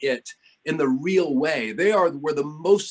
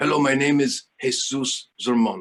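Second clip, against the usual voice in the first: clumsy, badly done rough non-native English accent; 3 semitones lower than usual. Recalling how a man introduced himself at a meeting, poor impression of Jesus Zermono. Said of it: "that is not a good impression of him".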